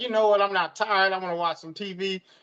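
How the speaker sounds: usual speaking voice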